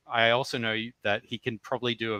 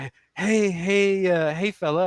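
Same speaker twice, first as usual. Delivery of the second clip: man's pitched-up, put-on female voice; 8 semitones higher, 5 dB louder than usual. Retelling how guys on VR Chat approach people: imitating a guy doing a female voice. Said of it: "perfect female impressions".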